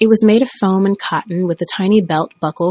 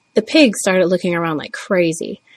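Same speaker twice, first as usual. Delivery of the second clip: ordinary delivery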